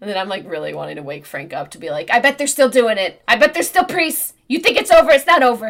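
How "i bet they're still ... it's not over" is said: very loud, high, put-on Boston accent. Recounting what they wanted to say after watching a film alone: Boston accent. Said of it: "You did it in a Boston accent".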